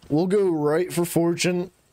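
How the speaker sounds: very high, screeching bird-of-prey call. Planning the next step out loud, the speaker slips into an eagle impression. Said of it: "that's my impression of an eagle".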